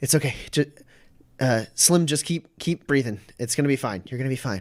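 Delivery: tearful, soothing, comforting tone, rushed. A character with tears in her eyes reassures slim, tearful, comforting. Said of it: "she's got tears in her eyes".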